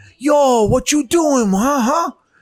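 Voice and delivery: bad, very high Mexican accent. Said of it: "like, bad Mexican".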